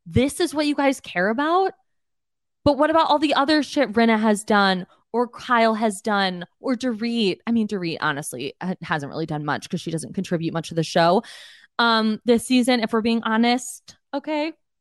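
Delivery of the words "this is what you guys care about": high, frustrated, screaming outburst. Retelling screaming at the TV during a reunion: imitating herself screaming. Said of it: "screaming 'cause I'm like".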